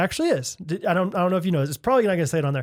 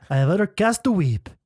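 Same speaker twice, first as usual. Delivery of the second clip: put-on French accent; 4 semitones higher than usual. Saying an idiom like a Frenchman: French accent. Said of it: "Is that good?".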